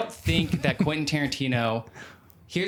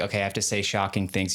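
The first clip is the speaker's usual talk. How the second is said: usual speaking voice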